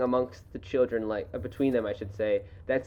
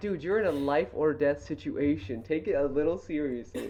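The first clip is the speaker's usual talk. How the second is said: ordinary delivery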